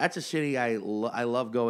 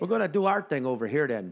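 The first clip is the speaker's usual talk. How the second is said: put-on Chicago accent, fairly close; 4 semitones higher than usual. Podcast host trying to talk like someone from Chicago, in an attempted Chicago accent. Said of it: "I cannot do a Chicago accent".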